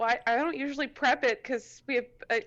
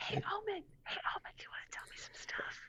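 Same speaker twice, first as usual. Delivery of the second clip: soft, hushed whisper; 13 semitones higher, 13 dB quieter than usual. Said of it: "you have to whisper".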